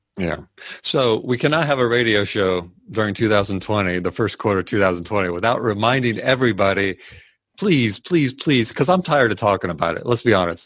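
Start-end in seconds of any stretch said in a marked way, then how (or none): 7.6-8.7 imploring, pleading, begging, repeated over and over. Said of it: "I feel like I'm begging and pleading".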